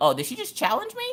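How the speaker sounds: high, put-on, affronted, indignant surprise. Retelling a mother's reaction to being challenged: retelling indignant surprise. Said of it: "And then you're like".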